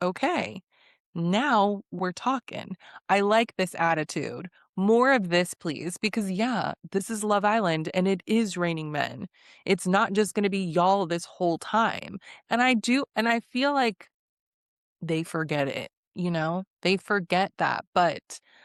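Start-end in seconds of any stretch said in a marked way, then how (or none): none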